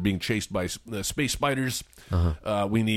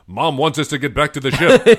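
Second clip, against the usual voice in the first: booming, very loud, pitched-up heroic robot voice; 5 semitones higher, 10 dB louder than usual. Recalling a robot in a show, the speaker does an Optimus Prime robot voice. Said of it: "like, Optimus Prime voice saying things like".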